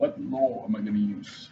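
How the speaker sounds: clumsy, low, quiet, fake British accent. Talking through a problem aloud, in a bad attempted British accent. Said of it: "Like a British accent".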